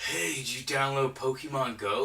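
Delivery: all worked-up, eager, excited voice. Retelling what the pastor asked at a party: imitating someone excited. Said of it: "he was all excited".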